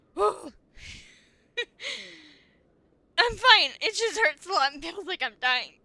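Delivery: very loud, high, pained laughter through speech. Saying it hurts after a big loss: laughing while upset. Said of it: "I'm laughing so I don't cry".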